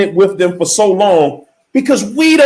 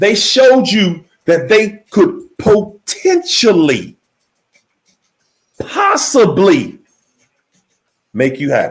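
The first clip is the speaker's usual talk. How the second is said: slow, deliberate delivery, each word laid out carefully. Speaker insists the listener hear this point, speaking slowly. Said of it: "I'm going to say this slow".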